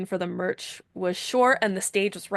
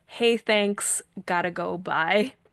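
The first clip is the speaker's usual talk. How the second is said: put-on polite but firm, courteous tone. Retelling how he excused himself and left, retelling a polite, firm brush-off. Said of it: "very politely, but like kind of firmly".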